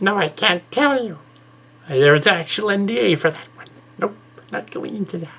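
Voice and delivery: very high, squeaky, piping voice. Retelling how a woman answered a question, in a high, squeaky voice. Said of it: "In a high, squeaky voice".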